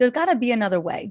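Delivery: ordinary delivery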